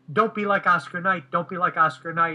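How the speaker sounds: ordinary delivery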